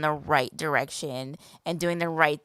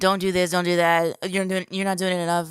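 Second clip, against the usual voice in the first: mock harsh, barking, scolding-sounding voice; 3 dB louder than usual. Retelling a critic's demands, imitating someone barking orders. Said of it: "you barking at me saying".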